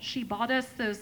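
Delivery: ordinary talk, nothing marked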